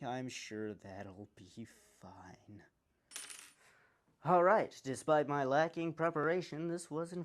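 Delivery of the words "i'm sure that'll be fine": immense, bone-dry sarcasm, low and slow. Talking through a build, the speaker remarks on a heat block with no set screw, heavily sarcastic. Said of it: "*with immense sarcasm*".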